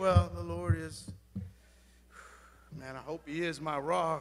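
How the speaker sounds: hesitant, timid, very quiet, unsure, no attitude. Showing the congregation how not to declare it: timid, without attitude. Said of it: "You can't say it".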